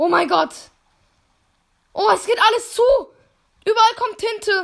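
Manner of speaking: high, loud, panicked cries.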